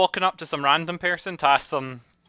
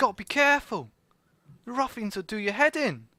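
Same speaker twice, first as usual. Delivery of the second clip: high put-on Cockney accent tinged with Scottish accent; 7 semitones higher than usual. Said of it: "a Scottish person trying to do Cockney".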